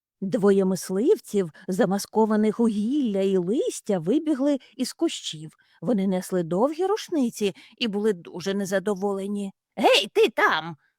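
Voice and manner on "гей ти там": high, loud shouting. One of two hunters bursting from the bushes calls out to Gregor, shouted. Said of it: "вигукнув один із чоловіків".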